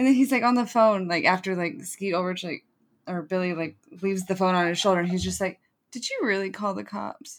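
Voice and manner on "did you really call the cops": mock-sad, acted sad voice. Recounting a scene, quoting a character on the phone: retelling a line all sad. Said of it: "And like all sad".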